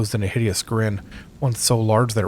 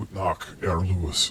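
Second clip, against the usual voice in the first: quiet, raspy exhaled creature voice, words pushed out; 3 semitones lower, 6 dB quieter than usual. The creature addresses the man before leaving the room: raspy, exhaled creature voice. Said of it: "the creature said in a raspy voice".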